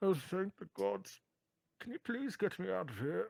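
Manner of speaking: very high, pitched way up, smothered and muffled voice. Voicing someone trapped under rubble who answers the person who found them: muffled voice. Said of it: "a muffled voice says".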